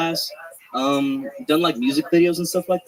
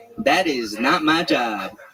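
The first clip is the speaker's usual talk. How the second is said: very slow, bossy, put-on woman's voice; 2 semitones lower than usual.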